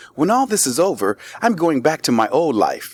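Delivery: neutral, plain, unmarked reading voice. Showing how an audition line was read, in a neutral voice. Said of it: "that's like my neutral voice".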